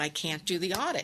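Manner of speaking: ordinary talk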